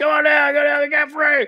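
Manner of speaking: mock very high, urgent, commanding battlefield yell. Retelling a sergeant yelling during a fight: imitating someone yelling. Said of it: "And he's yelling".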